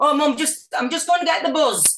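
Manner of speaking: put-on Wigan accent. Retelling telling Mum about getting the bus: imitating own past Wigan accent. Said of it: "change my voice to sound like people in the school".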